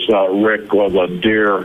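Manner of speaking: ordinary delivery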